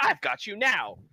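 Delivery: high-pitched, loud, triumphant calling out. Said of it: "you'll hear him call out".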